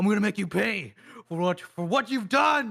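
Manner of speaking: angry. Voicing his character in a tabletop game, speaking to an enemy, angry. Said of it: "He's like angry".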